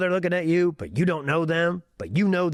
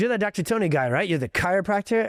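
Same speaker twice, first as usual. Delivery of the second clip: put-on, slightly hostile voice with a little edge. Chiropractor telling a story about a man questioning him, retelling an edgy question. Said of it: "he said it with a little bit of an edge".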